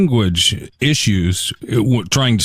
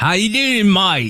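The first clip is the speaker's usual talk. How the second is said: very high-pitched put-on Australian accent; 9 semitones higher than usual. Speaker imagines visiting Australia and greeting a local, in an Australian accent. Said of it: "if you went to Australia and you said".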